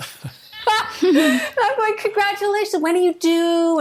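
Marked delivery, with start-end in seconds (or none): 2.0-3.8 very high, fawning gush. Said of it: "And fawning".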